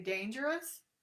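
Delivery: "dangerous" said with pitch rising at the end. Showing how a word becomes a question: rising pitch at end of dangerous. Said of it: "By using upward annotation, the word becomes a question".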